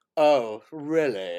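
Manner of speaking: put-on snooty, proper, posh British lady voice. Imitating a snooty film character: imitating a snooty proper british lady. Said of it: "proper British, like".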